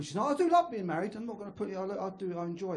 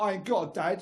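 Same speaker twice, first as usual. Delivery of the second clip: ordinary delivery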